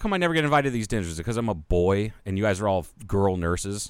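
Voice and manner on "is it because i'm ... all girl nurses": plain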